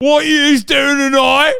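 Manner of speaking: put-on shrill, very loud, high-pitched Geordie accent. Showing how to do the Newcastle accent, in a Geordie Shore-style Geordie accent. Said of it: "Learn the Newcastle accent from this".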